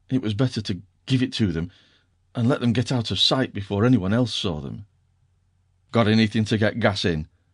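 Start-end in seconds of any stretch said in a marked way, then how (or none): 5.9-7.2 grunting surlily. Reading a novel aloud, an uncle grudgingly offering gas: grunting surlily. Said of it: "he grunted surlily".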